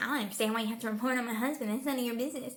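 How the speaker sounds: fast, mock rude, condescending, dismissive delivery. Imitating Kellyanne Conway talking to a reporter: imitating Kellyanne Conway being condescending. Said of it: "she's being condescending and rude".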